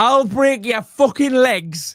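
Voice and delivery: angry, high, mildly threatening yell. Speaker retells what a granddad shouts at his grandkids, retelling a shout. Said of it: "He's shouting".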